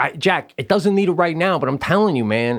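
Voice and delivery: ordinary delivery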